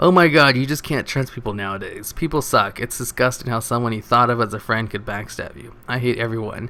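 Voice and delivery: ordinary talk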